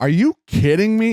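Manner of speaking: mock indignant, high-pitched, mad disbelief. Retelling the kid's reaction to a long golf drive: imitating someone mad. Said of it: "He's so mad".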